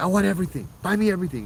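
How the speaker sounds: mock, high, demanding yelled outburst. Retelling an uncle yelling at a coworker offering food, retelling an uncle's yelling. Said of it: "he started yelling at my coworker".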